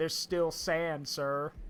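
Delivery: put-on very slow, soft drunken drawl.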